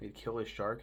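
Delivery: normal talking voice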